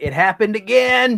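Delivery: loud, high-pitched shout. In a role-playing game, after the character is bitten again, yelling out. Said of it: "I I yell out".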